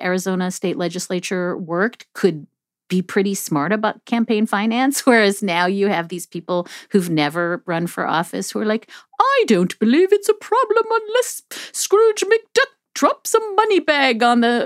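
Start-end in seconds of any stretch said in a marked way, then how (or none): 9.2-14.7 weird put-on posh cartoon voice, very high. Voicing first-time candidates on campaign finance, in a posh Scrooge McDuck voice. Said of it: "that was a weird voice to do Scrooge McDuck. ... It was like Downton Abbey".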